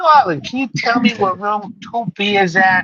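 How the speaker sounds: put-on high-pitched old New York lady voice.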